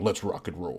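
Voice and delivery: heroic cartoon robot leader voice. Joking about sounding like a movie robot leader: Optimus Prime voice. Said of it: "that'll make me sound like, uh, fucking Optimus Prime".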